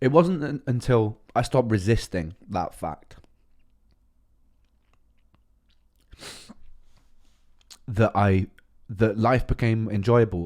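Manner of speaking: speaking through tears, slow. A speaker talks about their own experience, crying while speaking. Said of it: "I know that I'm crying right now".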